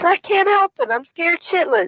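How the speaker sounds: tearful crying voice. Pleading on a monitored phone call not to be let get in trouble, crying. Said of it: "quit crying".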